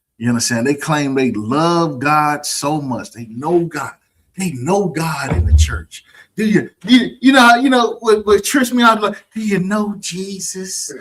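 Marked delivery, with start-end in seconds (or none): 9.3-10.9 high, slow voice with a twang at the end. Retelling how churchgoers ask a question: imitating churchgoers asking.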